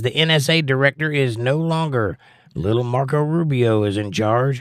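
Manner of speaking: normal talking voice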